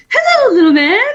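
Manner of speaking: chirpy, cheerful, very high-pitched voice. Retelling a son's morning greeting: imitating son's cheerful greeting. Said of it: "all cheerfully".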